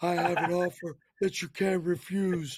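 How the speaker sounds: hoarse put-on mob-boss voice. Answering a friend on Monday evening with a bad throat, hoarse Godfather voice. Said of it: "making me sound like the Godfather".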